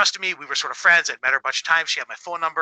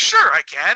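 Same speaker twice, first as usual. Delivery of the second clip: put-on big, heavy Swedish accent; 3 semitones higher, 5 dB louder than usual. Retelling a giant agreeing to wake the speaker's kid, in Torbjorn's thick Swedish accent. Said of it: "Big thick Swedish accent".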